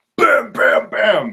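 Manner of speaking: high, loud shotgun blast sounds, bam bam bam.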